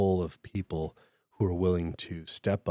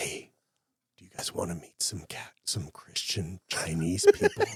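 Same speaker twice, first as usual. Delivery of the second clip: secretive, discreet, confiding tone. Quoting a university professor approaching them after a meeting, retelling a hushed, discreet tone. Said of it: "in this kind of hushed, discreet tone".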